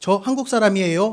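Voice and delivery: loud, sharp, snapping tone.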